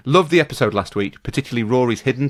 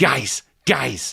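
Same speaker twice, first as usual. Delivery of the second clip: gravelly, creaky fake voice. Showing all you need for an impression: Pep Guardiola impression. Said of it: "That is that's how you do an impression of Pep".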